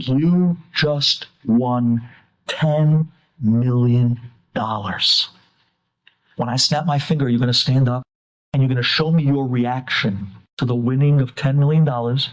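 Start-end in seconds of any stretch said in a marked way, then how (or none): 0.0-5.3 acted-out whisper, much lower, slower. Retelling what the hypnotist whispers into each guy's ear, retelling a whisper. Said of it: "He whispers into each one of the eight guys' ear".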